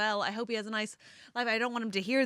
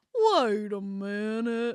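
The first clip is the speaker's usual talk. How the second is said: goofy put-on cartoon bear voice; 3 dB louder than usual. Mocking an audiobook narrator's voice for David: imitating a Yogi Bear voice. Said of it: "he does as, like, Yogi Bear".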